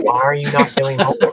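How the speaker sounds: mock yelling, loud screaming. Recalling watching a video, acting out the past self at the TV; retelling screaming at the TV. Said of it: "I was screaming at the TV".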